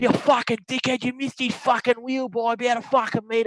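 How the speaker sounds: put-on loud hollered yell. Retelling a golf story, imitating an angry golfer: imitating a man yelling. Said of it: "And he's just yelling".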